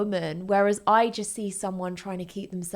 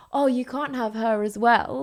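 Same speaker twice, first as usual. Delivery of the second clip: mock coy, flirtatious, teasing; 3 semitones higher, 3 dB louder than usual. Retelling a character's reply to a controlling man: imitating a flirty reply. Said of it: "she flirtily replies back".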